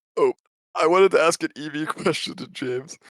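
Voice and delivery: talking through giggles. Pokémon player asking an opponent a question about the match, giggling. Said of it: "Sorry, I'm giggling".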